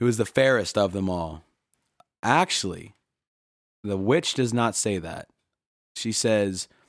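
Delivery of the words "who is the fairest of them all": ordinary talk, nothing marked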